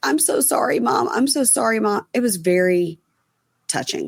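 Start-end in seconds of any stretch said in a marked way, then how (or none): 0.0-2.1 acted-out sobbing, bawling, high blubbering crying. Recapping a show, acting out a son apologizing to his mom; imitating someone crying. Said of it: "he just starts bawling, crying".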